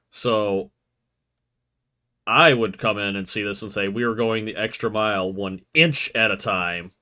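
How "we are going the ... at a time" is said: mocking, sarcastic tone. Retelling own past remark about the truck lettering: retelling a sarcastic remark. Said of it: "being sarcastic about the measurement stuff".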